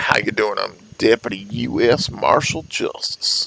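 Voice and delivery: slow, unhurried, drawn-out delivery. Showing the in-character introduction as a marshal: slowed-down marshal character voice. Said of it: "I slow my voice down".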